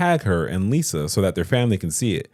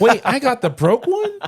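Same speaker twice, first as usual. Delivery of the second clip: squeaky, pitched-up put-on voice; 4 dB louder than usual. Showing what the sister from Coming to America sounds like. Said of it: "That's what she sound like".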